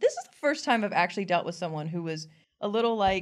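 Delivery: plain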